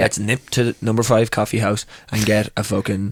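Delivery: normal talking voice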